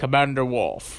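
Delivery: refined, upper-class British captain accent. Naming a Next Generation character: Jean-Luc Picard accent. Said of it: "I'm sorry about my Jean-Luc Picard accent".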